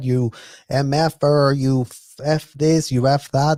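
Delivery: put-on screaming. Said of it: "he was being screamed at".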